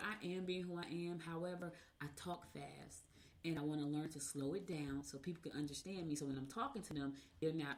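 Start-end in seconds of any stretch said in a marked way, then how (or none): none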